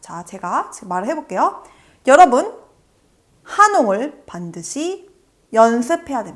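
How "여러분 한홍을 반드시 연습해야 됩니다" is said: 여러분, 한홍 and 연습 strongly stressed. Demonstrating where to put the point in a sentence, stress on 여러분, 한홍, 연습. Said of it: "여러분, 한홍, 연습에 포인트를 줬죠".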